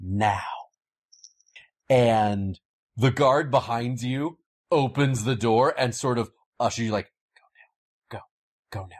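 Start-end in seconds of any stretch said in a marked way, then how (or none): 8.1-9.0 whisper, much quieter. Game master voicing a guard ushering the players out the door; whispering. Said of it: "He actually whispers that to you".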